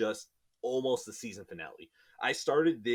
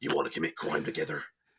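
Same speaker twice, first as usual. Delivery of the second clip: very low, dark superhero voice; 8 semitones lower than usual. Imagining a villain's pitch to the hero, the hero replies: Batman voice. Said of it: "That's a good Batman accent".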